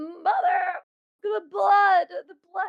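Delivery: very high-pitched, loud, distraught yelling cry. Retelling the scene where Norman Bates finds what his mother did: imitating Norman Bates yelling distraught. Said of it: "he is distraught".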